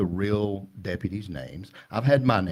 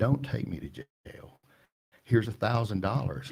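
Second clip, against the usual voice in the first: put-on crying voice, tearful. Retelling how people show up at the door: imitating someone crying. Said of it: "show up at our door crying".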